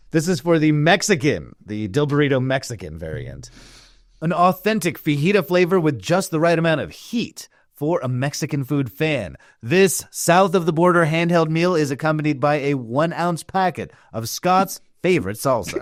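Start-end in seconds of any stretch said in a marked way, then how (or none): 4.1-15.8 put-on commercial advertising announcer voice. Reading product copy aloud in an advertising announcer voice. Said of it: "in your best copy voice".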